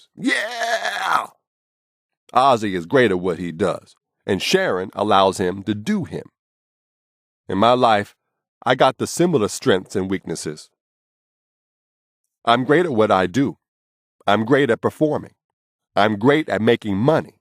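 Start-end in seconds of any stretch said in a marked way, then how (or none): 0.2-1.3 very high-pitched scream. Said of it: "and he screams".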